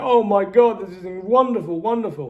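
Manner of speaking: play-acted, high, loud, tearful, overjoyed crying out in relief. Retelling the family's reaction to good news: imitating people crying with joy. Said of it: "They're crying".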